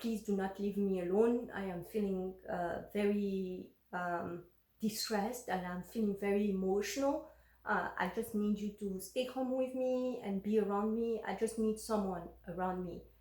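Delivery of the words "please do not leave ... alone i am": plain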